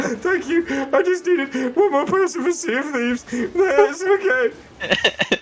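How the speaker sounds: very high, slow, childish put-on toddler voice. Retelling being thankful a friend joined the game: imitating self as a toddler. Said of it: "like a fucking toddler at a birthday party".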